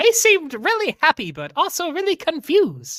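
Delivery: naive, squeaky, high little goblin voice. In a tabletop game, a goblin stall keeper answers the players, squeaky goblin voice. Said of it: "basic finances to a goblin that has it's always been like a barter system or a just free system. / He sees [name], / It's squeakier than that. / But why would you give me shiny coins or food? I can't".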